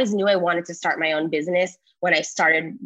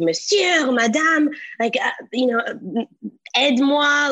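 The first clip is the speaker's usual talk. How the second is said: put-on panicked stuttering, much higher pitch; 7 semitones higher than usual. Recalling calling to strangers in French, the speaker is imitating panicked stuttering. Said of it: "I was stuttering".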